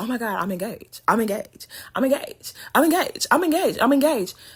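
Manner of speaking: high pitch, repeated round and round in loops. Mocking a cast member who keeps announcing her engagement: imitating Tawanda. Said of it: "I know Tawanda is like".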